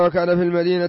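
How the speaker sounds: plain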